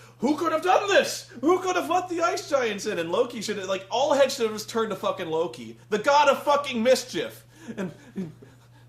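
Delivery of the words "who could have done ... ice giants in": high, loud mock-heroic clueless hero voice. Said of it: "Thor's like".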